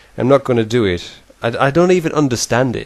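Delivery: ordinary talk, nothing marked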